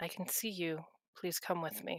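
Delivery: quiet, soft voice. Voicing a character who approaches someone yelling in a crowd: quietly. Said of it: "just kind of quietly next to the person".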